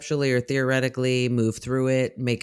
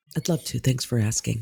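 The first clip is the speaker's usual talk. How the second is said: broadcast newscaster voice. Answering a cohost's question about the next segment: broadcast voice. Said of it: "Love it when she puts on her broadcast voice".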